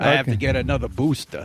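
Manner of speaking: put-on Brooklyn accent, pitched low. Talking with Frank on the phone, in a mock Fauci accent. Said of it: "Are you mocking Fauci's accent?".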